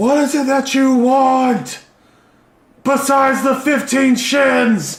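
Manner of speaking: high, slow, loud shout.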